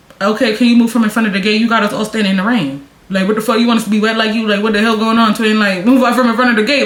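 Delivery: ordinary delivery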